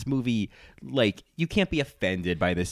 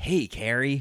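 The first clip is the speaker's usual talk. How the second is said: terrible, high, put-on California stoner voice; 5 semitones higher than usual. Offering to show their really terrible impression of Aiden, terrible Aiden impression. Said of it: "I do a really terrible impression of Aiden".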